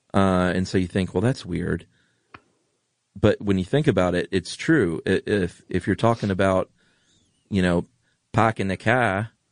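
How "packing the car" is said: strong Boston accent, dropped R. Speaker illustrating regional accents, in a hard Boston accent. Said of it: "dropping the R as with that hard Boston accent".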